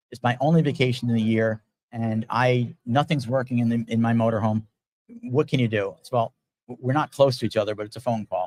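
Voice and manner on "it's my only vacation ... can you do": normal talking voice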